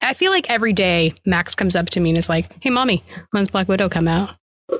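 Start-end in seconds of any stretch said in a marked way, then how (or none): none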